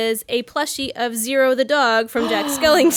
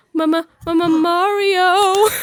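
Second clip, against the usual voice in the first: put-on scared cartoon voice, higher; 5 semitones higher, 3 dB louder than usual. Retelling how Luigi sounds in the game when scared: scared Luigi voice. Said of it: "it's really cute when Luigi gets scared".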